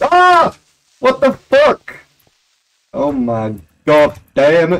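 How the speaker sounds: loud, startled, frightened screaming, swooping. Streamer playing a horror game, caught by a scare, screaming in fright. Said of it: "Sorry for all the screaming".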